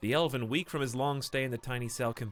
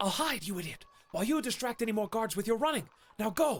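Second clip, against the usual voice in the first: very high, urgent hiss; 9 semitones higher than usual. Narrating a story, reading the Elven's line to you; hissing. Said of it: "he hisses".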